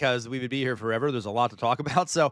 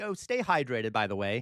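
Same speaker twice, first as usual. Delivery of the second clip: put-on polite British manner; 3 dB quieter than usual. Imitating a message telling the speaker to stay hydrated: mock polite British voice. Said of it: "this is so British".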